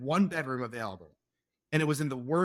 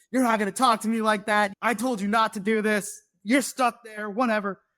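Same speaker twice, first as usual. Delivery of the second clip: put-on high, heated, lost-temper yelling; 7 semitones higher, 4 dB louder than usual. Recounting losing their temper at a man, the speaker is retelling own yelling. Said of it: "I was like yelling at him".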